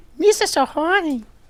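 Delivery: high fast cartoon voice. Asked for a reenactment, doing a Jar Jar Binks voice. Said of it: "High voice, really fast, Jar Jar Binks".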